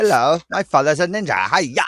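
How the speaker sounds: put-on loud, old dubbed kung fu film voice. Joking about old kung fu movies: imitating an old dubbed kung fu movie. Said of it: "whenever the voice would kind of go with the mouth".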